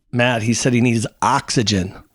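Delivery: ordinary talk, nothing marked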